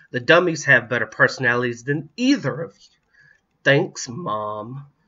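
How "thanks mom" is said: dry, sardonic sarcasm. Reading a story, a child answers their mother after being ordered out, sarcastic. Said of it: "Kris said sarcastically".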